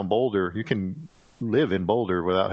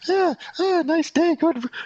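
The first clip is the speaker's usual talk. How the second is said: very high, fake-casual tone. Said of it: "pretend like your heart isn't about to explode".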